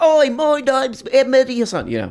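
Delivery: pitch way up, put-on British voice. Mocking a British debater with a Mehdi Hasan impression. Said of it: "This is my impression of him right here".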